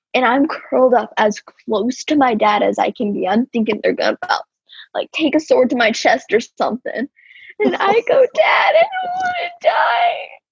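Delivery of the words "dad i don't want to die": shrill, terrified, high, drawn-out sobbing wail. Retelling a frightening memory, the speaker pleads to his dad, acting out past crying. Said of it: "I'm crying the entire time".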